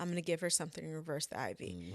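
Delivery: ordinary talk, nothing marked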